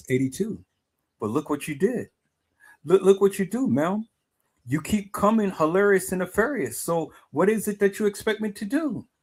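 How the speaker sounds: calm, cool, unruffled, pitched slightly high. Retelling own words to someone who hollers at them, in a calm, cool voice. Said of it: "I say in a calm, cool voice".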